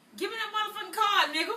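shouting. Demanding the card after a question about food stamps: yelling. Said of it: "Who was you yelling at?".

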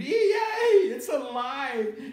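very high, very loud, shrill shriek. Narrator reading a story, a lady reacting to a doll that just yelled: screaming. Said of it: "The lady screamed".

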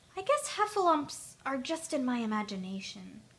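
ordinary delivery

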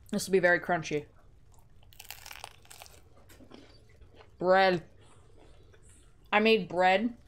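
chewing while talking, food in mouth. Speaker eating bread by the microphone, talking while chewing. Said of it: "your model is chewing".

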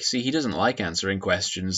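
ordinary talk, nothing marked

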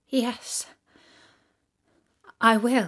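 quavering, tremulous voice, barely steady. The little princess accepts the witch's painful bargain, in a trembling voice. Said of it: "said the little princess in a trembling voice".

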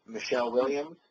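ordinary talk, nothing marked

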